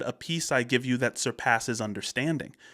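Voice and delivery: ordinary talk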